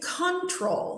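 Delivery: control wrongly stressed on first syllable, CON-trol. Teaching word stress, showing the wrong way to say control. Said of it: "we say control".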